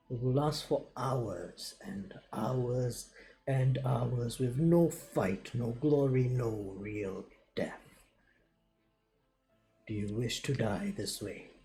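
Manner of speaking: hushed, menacing half-whisper, close up. A player's character leans in to a wounded enemy, half-whispered threat. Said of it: "I'm gonna whisper to him".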